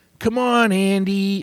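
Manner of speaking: high, friendly nice-guy voice. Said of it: "when he's talking like that".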